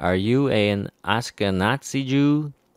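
normal talking voice

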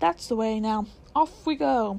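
ordinary delivery

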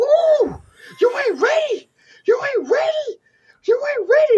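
mock-excited man voice. Describing a man starting an N64 game for his kids, imitating his excitement. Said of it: "he's just getting all excited".

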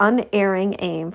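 ordinary delivery

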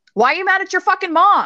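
very high, screaming, raging yell. Describing doing Reiki on people, the speaker reenacts yelling at them, reenacting own screaming. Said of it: "I'm like screaming".

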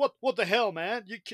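loud put-on American accent, cut off mid-word. Imitating a guy who was supposed to be british: put-on american accent. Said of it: "that's American".

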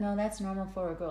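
ordinary talk

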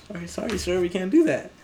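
acted frightened cracking voice. Retelling apologizing to a customer wanting free pizza: imitating own cracking voice. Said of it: "My voice is already cracking".

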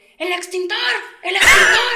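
very high, very loud shouting. Retelling her date running back toward her, imitating someone shouting. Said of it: "corriendo y gritando".

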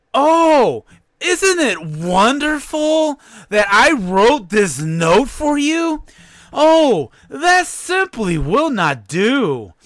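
stagey, hammy amateur actress delivery. Mocking an actress by imitating her community-theater acting style. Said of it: "I'm going to do my best to imitate her acting style".

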